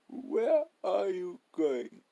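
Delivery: raspy, very high hoarse voice. Reading the boarding-house owner's question as the narrator heads out, hoarse voice. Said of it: "In a hoarse voice he asked".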